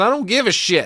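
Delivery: high-pitched, loud, defiant yell.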